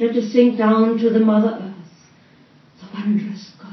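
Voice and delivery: put-on grand, haunting voice. Speaker imitates the woman leading the proceedings, grand, haunting voice. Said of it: "speaking in this grand voice that was haunting".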